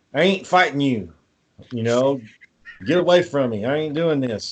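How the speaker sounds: rustic country bumpkin voice. Speaker describes the Japanese version, quoting Goku: country bumpkin Goku voice. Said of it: "it's like he's a country bumpkin".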